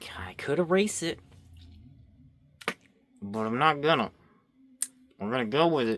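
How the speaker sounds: very loud, forced through clenched, gritted teeth. Speaker drawing decides to keep a mistake anyway, said through gritted teeth. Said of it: "I'm saying that through my teeth".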